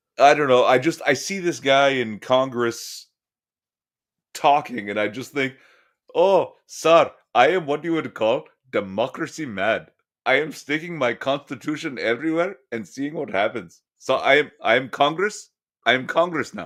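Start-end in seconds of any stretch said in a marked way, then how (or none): 6.2-16.7 put-on thick Indian accent. Imitating a congressman seen talking: imitating a thick Indian accent. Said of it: "the thick accent and the ridiculous hair?".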